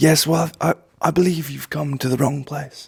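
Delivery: nature documentary narrator voice. In an improvised sketch, the speaker answers a lost visitor: David Attenborough voice. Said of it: "You're David Attenborough".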